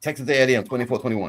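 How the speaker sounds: hurried, fast delivery. Forcing out a game pick they can't believe they're making, said fast. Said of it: "Swallow hard and say it fast".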